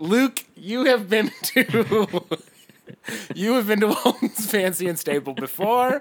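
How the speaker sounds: slow, giggling, laughing delivery.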